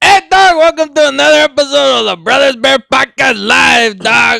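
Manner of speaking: raspy, very high-pitched put-on voice. Welcoming listeners to another episode of a live podcast on take two, in a Cheech Marin voice. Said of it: "I sound like Cheech Marin".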